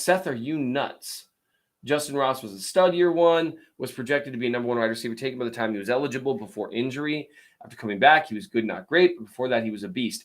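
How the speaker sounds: ordinary delivery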